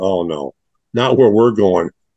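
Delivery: ordinary delivery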